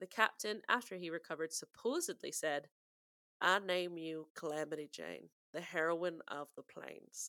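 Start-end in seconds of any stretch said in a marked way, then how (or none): 3.4-7.3 frontier accent, Lakota. Quoting a captain naming Calamity Jane, in a Lakota frontier accent. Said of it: "that is my Lakota frontier accent".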